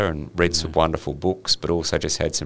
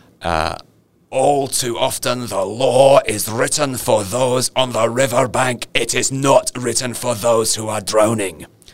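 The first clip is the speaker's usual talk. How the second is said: put-on slow, raised, vaguely Scottish-sounding accent; 7 semitones higher, 5 dB louder than usual. Quoting a guest lecturer's opening statement to a law class, in a Scottish-sounding accent. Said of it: "Is he Scottish?".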